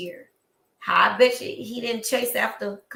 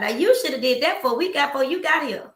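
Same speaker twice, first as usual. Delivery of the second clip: mock loud hollering, yelled out; 4 semitones higher than usual. Retelling how a woman called out at a live band: imitating someone yelling. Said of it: "And she yells out".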